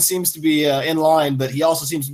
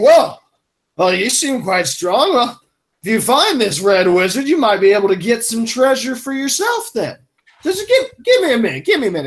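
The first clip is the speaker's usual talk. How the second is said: put-on drunken slurring, words smeared together, pitched up; 5 semitones higher than usual. The narrator voices Chief Yorb speaking to the players, drunkenly slurring his words. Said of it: "drunkenly slurring his words".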